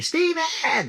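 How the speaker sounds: play-acted screaming, very high pitched. Retelling a mom running out and calling a name: imitating mom screaming. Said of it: "She's screaming".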